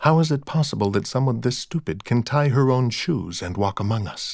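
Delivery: ordinary delivery, nothing marked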